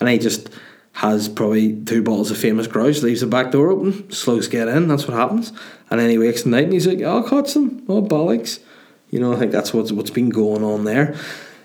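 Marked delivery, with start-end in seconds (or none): 7.0-8.6 very high character voice, pushed high. Imagining a man putting her to bed: imitating Carl's voice. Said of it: "imagine he speaks like this a bit".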